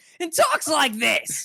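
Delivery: shredded, raspy voice, strained on every word. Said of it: "that one Deldar who shreds his voice constantly".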